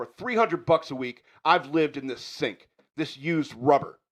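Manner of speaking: furious, angry tirade, winding up. A character goes off in front of Frank and a woman: ranting. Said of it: "And the rant begins".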